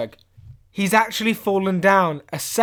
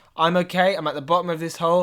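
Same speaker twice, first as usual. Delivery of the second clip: usual speaking voice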